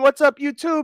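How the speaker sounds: screamed at full blast, hollered. Repeating the greeting viewers hear each morning: screaming own catchphrase. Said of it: "When you hear me screaming".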